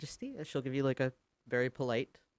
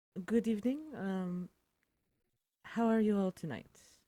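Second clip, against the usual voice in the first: put-on very theatrical, dramatic French accent, pitched up; 6 semitones higher, 4 dB quieter than usual. Previewing how she will greet everyone tonight, in a dramatic French accent. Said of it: "in a very dramatic uh, French accent".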